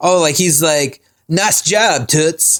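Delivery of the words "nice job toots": very heavy put-on Brooklyn accent. Quoting a cartoon character's annoying accent: imitating a brooklyn accent. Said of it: "he's super, like, Brooklyn".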